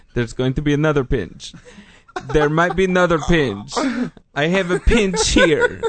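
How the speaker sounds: put-on Russian-accented voice. Quoting what someone said about a pinch, in a russian accent. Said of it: "And that was a Russian accent".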